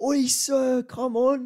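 exaggerated bloke voice, very high, very slow, drawn out. Retelling how someone mocked a guy at the footy: exaggerated impression of a guy at the footy. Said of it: "an exaggerated, like, boy impression".

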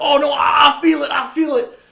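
high, loud taunting cry. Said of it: "he's kinda taunting him".

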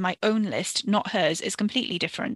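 ordinary delivery

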